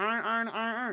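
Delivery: put-on very high-pitched Baltimore accent on iron. Retelling how another guy said a word, in a Baltimore accent. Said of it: "Baltimore accent".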